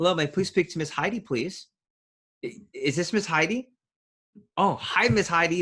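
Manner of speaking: excited, cheerful tone. Demonstrating a phone call asking to speak to miss heidi: excited phone greeting. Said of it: "and it's excitement".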